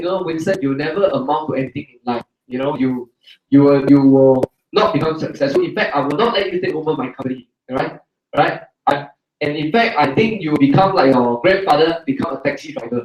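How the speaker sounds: ordinary delivery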